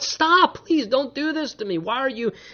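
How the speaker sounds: desperate, high-pitched, screamed, crying voice. Retelling a Bible story, voicing the young man thrown in the pit, acting out a screamed plea. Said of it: "And he's screaming out".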